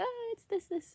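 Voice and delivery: very high voice, fighting off crying. Retelling giving a lady a flight code: imitating holding back tears. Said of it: "trying not to, like, cry. And I don't want my voice to, like, shake".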